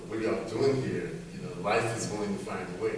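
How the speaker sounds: ordinary talk, nothing marked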